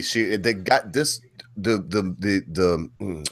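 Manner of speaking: slow, halting stutter, stuck on repeated words. Speaker apologizing to listeners for tripping over words, stuttering. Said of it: "I'm stuttering here".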